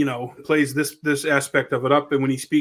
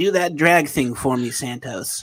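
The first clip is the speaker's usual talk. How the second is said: slow, drawn-out delivery, every word stretched. Retelling what a senator says in the Senate bath: imitating Lindsey Graham. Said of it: "Lindsay, he's like".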